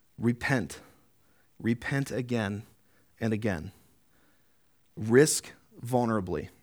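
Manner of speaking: slow, unhurried reading.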